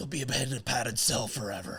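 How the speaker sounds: acted gruff heroic voice. Doing a scene read of the Joker and Batman interaction: Batman voice. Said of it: "Gotta do the voices".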